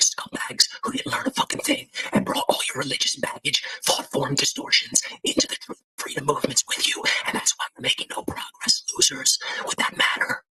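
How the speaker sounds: hushed, barely voiced whisper throughout. Asking the audience if delivery matters, the speaker tries a line; whispering. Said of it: "What if I whisper it like this?".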